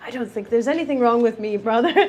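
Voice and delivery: fast, haughty, self-important, pompous tone. Speaker retelling one identical twin answering the other, mock-pompous. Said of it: "looks at him kind of pompous and goes".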